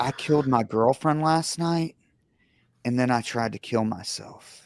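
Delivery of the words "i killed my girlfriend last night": plain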